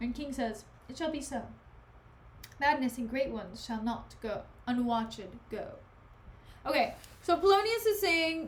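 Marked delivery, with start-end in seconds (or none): none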